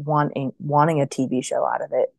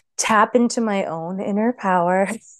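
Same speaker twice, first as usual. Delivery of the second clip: heavy sarcasm, high-pitched and drawn out; 6 semitones higher than usual. Answering what the solution to the hauntings was: laying on the sarcasm. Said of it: "I'm laying on the sarcasm here".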